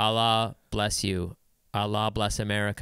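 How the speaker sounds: mock deadpan delivery. Describing a kid who goes around with a sign; imitating a deadpan delivery. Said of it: "around very deadpan".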